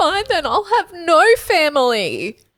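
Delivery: mock small child in full tantrum, high, drawn-out. Retelling a child's big tantrum: imitating a child's tantrum. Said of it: "having a big tantrum and was like".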